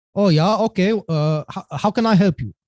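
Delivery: put-on thick German accent. Retelling a phone call, voicing the man who answers, in a thick german accent. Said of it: "Thick German accent, the thickest that you could ever imagine".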